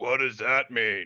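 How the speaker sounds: regular talking voice, not whispering. Voicing a character answering a whispered remark: loud, not whispering. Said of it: "Not whispering at all".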